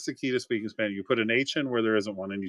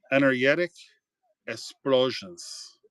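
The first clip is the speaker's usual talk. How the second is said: put-on South Florida Cuban accent, g said as y; 2 semitones higher than usual. Reading a card name aloud, doing it the Cuban way: Cuban accent. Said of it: "I can do it the Cuban way".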